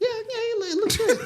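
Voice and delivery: very high put-on voice. Acting out a reply to a girlfriend's dress: put-on high voice. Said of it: "I'd have to do the high voice".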